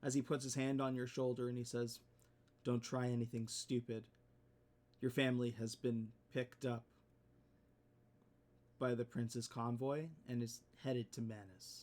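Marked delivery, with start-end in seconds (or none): 2.6-11.8 close, hushed, secretive half-whisper. Narrating a general leaning in to a player's ear, half-whispering. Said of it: "or whispers in your ear".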